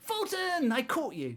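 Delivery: piercing gleeful shriek, very high, very loud. A little tiefling grabs his hand and calls out: a loud scream. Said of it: "in a loud voice screams".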